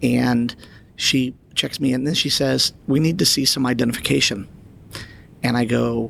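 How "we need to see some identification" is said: ordinary talk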